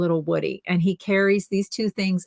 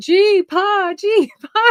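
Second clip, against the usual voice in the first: put-on shrill, very high, very slow screaming child voice; 13 semitones higher, 7 dB louder than usual. Retelling a goodbye at a security gate, imitating a child screaming. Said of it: "he starts like screaming".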